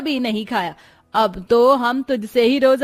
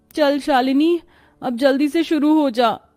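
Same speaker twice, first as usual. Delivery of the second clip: strained, suffering, labored voice. A new bride urges herself to start cooking for her first kitchen ritual: troubled by the heat. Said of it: "[name] विदा होकर अपने ससुराल पहुंचती है, / [name] विदा होकर अपने ससुराल पहुंचती है, / जहां उसकी सास और दोनों नंदे उसका बड़े प्यार से स्वागत करती हैं। / गर्मी से परेशान बेचारी [name] पसीना बहाते हुए खा".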